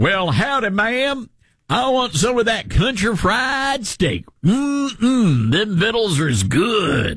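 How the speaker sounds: over-the-top Southern country accent. Mocking how someone would order at Cracker Barrel, in an exaggerated Southern accent. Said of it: "you don't talk like that".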